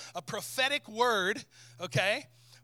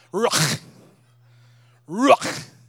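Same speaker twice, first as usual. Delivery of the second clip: very loud "ruach" with a throaty catch; 10 dB louder than usual. Showing the congregation how to say the Hebrew word: ruach said with throat catch. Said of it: "like you got popcorn hung in your throat".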